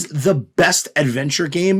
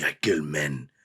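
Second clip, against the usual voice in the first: put-on Spanish accent; 10 dB quieter than usual. Describing a movie villain, imitating Antonio Banderas Spanish accent. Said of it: "He's talking in his Spanish accent".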